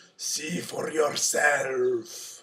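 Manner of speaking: loud, furious, ogre-like roaring voice. Narrator reading a fairy tale, the ogre answering Puss: furious roaring ogre. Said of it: "roared the furious ogre".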